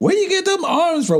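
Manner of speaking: put-on West Indian accent, very high pitch. Retelling what an older lady at work asked: imitating a Caribbean accent. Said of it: "With her Caribbean accent".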